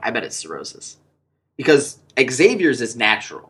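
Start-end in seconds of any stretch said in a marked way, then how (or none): 0.0-1.0 hushed, very quiet whisper spoken aside. Retelling a remark made to a fiance in a movie theater: imitating own whisper. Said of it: "I kinda whispered to Alicia".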